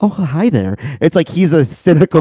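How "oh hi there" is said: incredibly sweet, polite, pitched-up phone voice. Imitating a friend on the phone with customer service: incredibly sweet, nice voice. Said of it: "he would develop this incredibly sweet, nice voice".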